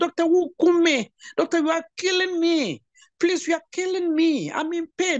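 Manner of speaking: acted shrill, sobbing, very high crying shout. A speaker retells a patient's words to her doctor, imitating a woman crying and shouting. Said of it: "The woman was crying, shouting".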